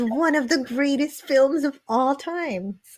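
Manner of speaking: mock, tongue-in-cheek, sarcastic delivery. Reading a viewer's chat comment aloud about a movie: sarcastic reading. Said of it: "I'm saying it sarcastically".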